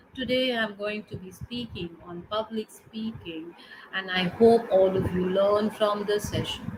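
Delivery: very soft, weak, powerless speaking voice. Showing an audience how not to open a speech, in a very soft voice. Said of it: "if you use a very soft voice".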